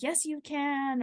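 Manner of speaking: high, slow, encouraging yell.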